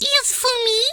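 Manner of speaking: badly done character voice, very high pitch. Drawing Whiskers saying "is for me": bad Whiskers voice. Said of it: "I don't think I did the voice very well".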